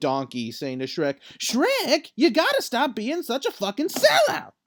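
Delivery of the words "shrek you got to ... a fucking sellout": pitch pushed way up, swooping all over. Speaker imagines Donkey talking to Shrek, in a Donkey impression. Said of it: "That was a good impression".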